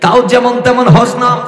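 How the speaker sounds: high, loud, fervent preaching-style outburst.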